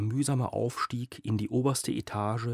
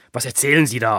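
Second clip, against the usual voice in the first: very loud, worked-up, agitated roaring bellow; 12 dB louder than usual. A narrator reads a character bellowing into the phone in an agitated voice. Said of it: "brüllte Hüschen mit erregter Stimme".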